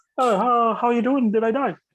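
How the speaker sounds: high-pitched, froggy puppet character voice. Voicing a frog creature raised from the dead: Kermit voice. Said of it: "And it has the Kermit voice".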